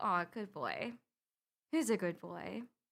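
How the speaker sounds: mock-nonchalant tone. The speaker acts out praising their dog: acting out a nonchalant tone. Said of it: "I say that like nonchalantly".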